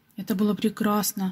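plain

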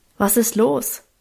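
plain reading voice

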